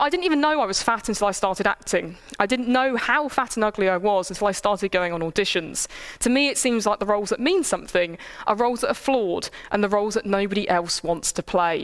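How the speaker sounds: normal talking voice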